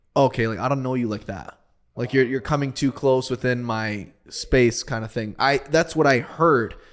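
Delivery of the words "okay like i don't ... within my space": ordinary talk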